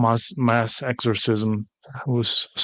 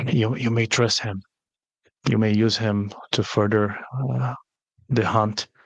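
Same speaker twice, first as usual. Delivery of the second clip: secretive, low-key, quiet tone. A character speaking to a player's character, in a very hushed voice. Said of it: "Still very hushed voice".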